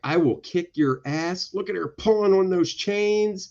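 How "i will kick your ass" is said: ordinary delivery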